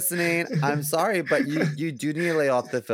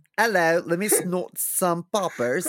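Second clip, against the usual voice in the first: put-on bad British accent; 2 semitones higher than usual. Doing a comic bit for the others in a bad British accent. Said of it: "I like the bad British accent".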